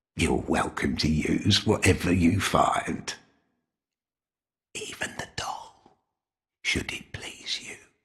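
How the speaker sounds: barely voiced, hushed whisper under the breath. Speaking a line in a game, under the breath: whispering tone. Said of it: "he says it under his breath in this whispering tone".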